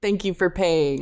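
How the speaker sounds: put-on, very formal polite voice. Retelling how someone thanked a drunk man for paying: very formally, imitating Risako. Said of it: "very formally".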